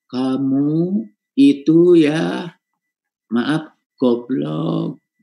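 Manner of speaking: very slow, drawn-out, each word stretched out. Showing how a phrase sounds when spoken with slow delivery. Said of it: "dengan kata lambat".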